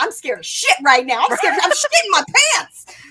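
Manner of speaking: yelling. Reacting to a shocking book epilogue with other readers: yelling. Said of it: "I'm yelling so much".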